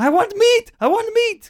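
very high, rising, insistent, demanding shouting. Retelling how the game feels like a restaurant: imitating Elias shouting. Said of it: "Elias, uh, shouting".

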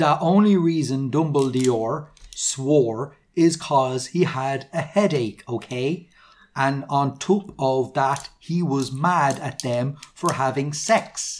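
normal talking voice

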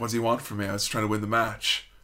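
mock mutter under breath. Retelling his reply right after losing the match, retelling a mutter under breath. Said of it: "Jericho is under his breath".

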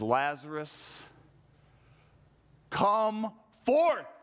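play-acted, authoritative, commanding voice. Retelling how Jesus calls to Lazarus at the tomb: voice of authority. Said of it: "with authority in his voice".

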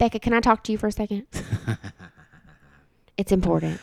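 soft, swooping reality-TV contestant voice, big lilt. Asked by another speaker for one, the speaker does a Tia impression. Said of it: "Can you do a Tia impression for us?".

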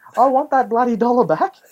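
shrill, very high-pitched screaming voice. Retelling a woman whose shopping trolley was taken: imitating a woman screaming. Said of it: "she's screaming and saying".

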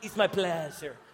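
low, sultry, seductive, charming voice. Coaching someone to say a line more sexy: sexy Antonio Banderas style. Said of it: "You got to do it a little bit more sexy, like Antonio Banderas".

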